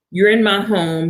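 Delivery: normal talking voice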